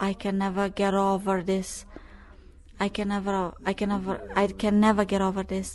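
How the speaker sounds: plain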